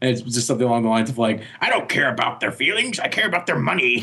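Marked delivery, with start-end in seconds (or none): 1.6-4.0 cartoon crab character voice. Describing a side project animating Mickey Mouse, speaking in Mr. Krabs voice. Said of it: "using the voice from Mr. Krabs from SpongeBob".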